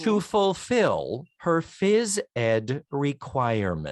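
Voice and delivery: very slow, deliberate, each word carefully drawn out. Podcast host telling a story, saying a phrase very slowly so listeners digest it. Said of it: "Did you notice how slowly I said that?".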